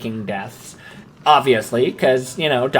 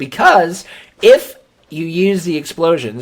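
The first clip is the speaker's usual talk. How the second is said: small accidental voice crack mid-phrase; 4 semitones higher than usual. Explaining how to get through a game level; voice cracking. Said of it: "that was a fun little voice crack there".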